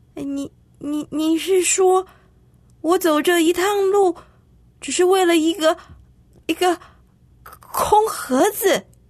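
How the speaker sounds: astonished, disbelieving. Told the box was empty all along, a character asks the bear, surprised. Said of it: "哈林惊讶地问".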